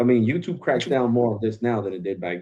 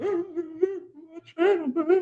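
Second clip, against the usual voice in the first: mock very high, teary lament, drawn-out "my"; 3 dB quieter than usual. Retelling what he said while tearing up: imitating his own past tearful self. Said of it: "I was tearing up".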